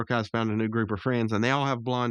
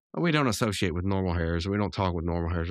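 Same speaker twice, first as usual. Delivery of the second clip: ordinary talk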